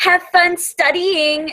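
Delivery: grating, most irritating put-on voice possible, pitched high. Imitating a girl who walks past the class, in an annoying voice. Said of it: "in the most annoyingest voice ever, and I'll just imitate her right now".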